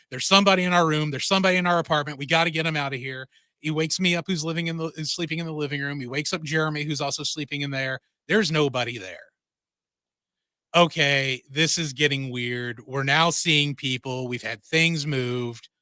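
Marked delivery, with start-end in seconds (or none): none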